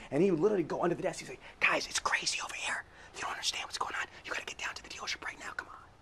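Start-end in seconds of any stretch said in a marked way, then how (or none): 1.6-5.8 secretive low hushed whisper, inflection dropped. Retelling a man who drops his inflection and ducks under the desk: low hushed voice. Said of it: "drop his inflection down".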